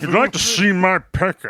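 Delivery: very high, loud, swooping, sing-song put-on voice. Joking about an old film actor: Gregory Peck voice. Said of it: "how does he talk again?".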